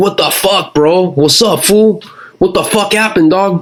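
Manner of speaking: high-pitched, furious, pissed off. Retelling a crash, quoting the other driver who got out: imitating a pissed-off Southsider guy. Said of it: "he's all pissed off".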